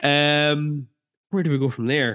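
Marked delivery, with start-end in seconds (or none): 1.3-2.1 put-on Irish accent, plain talking. Moving the conversation on, the speaker slips into an irish accent. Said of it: "Apparently, we do an Irish accent".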